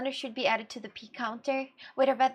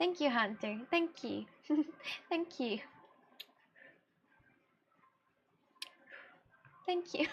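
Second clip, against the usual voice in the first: soft, weepy, tearful, crying voice; 7 dB quieter than usual. Answering hunter's praise of their english, thanking hunter: crying thank-you. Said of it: "don't cry, sweetheart".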